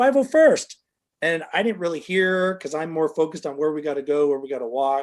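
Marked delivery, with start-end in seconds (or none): 0.0-0.8 high, loud called-out yell. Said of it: "he's like".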